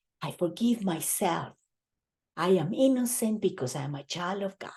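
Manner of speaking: soft, half-whispered voice. Leading a group through an affirmation, repeating it: half-whisper. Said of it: "Now in a whisper".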